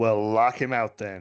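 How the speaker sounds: loud commanding voice. Ordering the chief engineer in character: Commander Riker voice. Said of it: "in my best Commander Riker voice".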